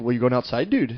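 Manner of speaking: put-on soft, Canadian-sounding northern Pennsylvania accent. Mimicking how people in northern PA talk, in a northern Pennsylvania accent. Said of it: "Kind of Canadian".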